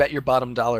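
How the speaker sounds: plain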